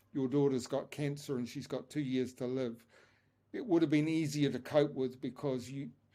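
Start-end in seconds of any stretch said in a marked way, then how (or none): none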